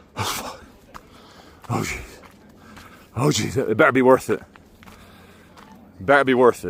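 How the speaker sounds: out of breath, winded. Climbing more steps up a hill while talking: out of breath. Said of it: "I try to keep narrating as I lose my breath".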